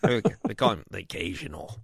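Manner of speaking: put-on low, soft, old-timey way of talking.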